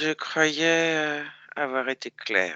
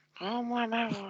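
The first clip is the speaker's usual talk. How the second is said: put-on little girl voice, higher pitch, quieter; 9 semitones higher, 9 dB quieter than usual. Demanding their own voice back from Marilyn, who claims to be boss: little girl voice. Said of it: "tu réponds à ma question avec ta voix de petite fille".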